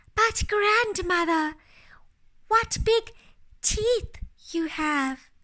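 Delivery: slightly quivering voice. Reading a fairy tale, the little girl speaks to the wolf, voice quivering slightly. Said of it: "her voice quivering slightly".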